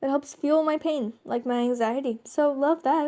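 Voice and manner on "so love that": dry, ironic, sarcastic throwaway delivery. Talking about anxiety fueling pain, then remarking: sarcastic. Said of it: "That was me being sarcastic".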